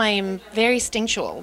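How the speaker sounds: normal talking voice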